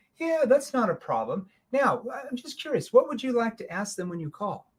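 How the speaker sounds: light, curious, inquisitive, agreeable tone. Demonstrating how to answer a client's request for references, in a curious tone. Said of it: "notice that's a curious tone".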